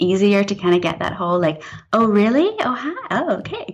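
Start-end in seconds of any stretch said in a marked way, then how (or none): 1.9-3.7 put-on slow, high-pitched, flirty American accent. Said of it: "I used to flirt in American".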